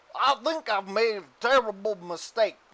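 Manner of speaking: put-on slurred, drunk speech. Narrating a scene, voicing a man who just drained a flask: slurring. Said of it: "he slurs".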